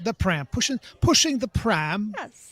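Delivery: very loud, high, terrible fake British accent. Bantering with a co-host, in a terrible British accent. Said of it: "That's terrible British accent there".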